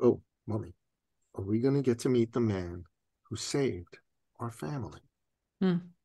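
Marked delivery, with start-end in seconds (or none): 0.0-5.0 hushed, soft, serious and grave voice. Retelling how a mother's young son spoke to her, in a boy's hushed, serious voice. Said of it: "lowered his voice and said".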